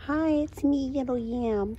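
put-on babyish, cutesy little-toy voice, baby talk. Playing with a little yam toy and voicing it, in baby talk. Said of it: "I have to baby talk whenever I play with these".

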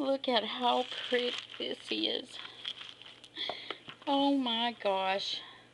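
teary, weeping voice, crying through words. Filming something pretty for viewers, the speaker is crying. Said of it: "I'm crying like a big dope".

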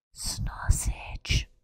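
breathy, near-silent, very quiet whisper. Saying a word after telling herself to say it very quiet: very quiet. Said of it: "Say it very quiet".

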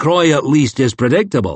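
ordinary delivery

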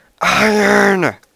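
thrilled, excited shriek, very loud and very high. Retelling how he screamed at each find while mining, mock-excited loud scream. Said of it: "he would just scream, IRON! In a really loud voice".

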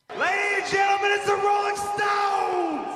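sudden, shrill, very high yell. A wrestler opening his promo, yelling for no reason. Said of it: "he yells this".

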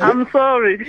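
slow, giggling, laughing delivery.

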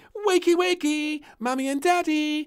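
shrill, very loud, high crying out. Reading a story, the little princess wakes her parents early in the morning: crying out. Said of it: "Cried Little Princess".

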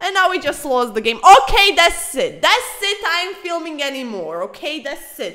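fed-up, very loud, high angry outburst. Reacting right after losing the chess game: angry. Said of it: "I'm very angry currently".

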